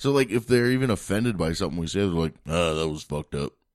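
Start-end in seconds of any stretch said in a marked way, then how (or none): 2.5-3.5 put-on casual, unbothered, offhand man voice. Daniel acts out how men react when offended, in a man voice. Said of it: "you just used your man voice".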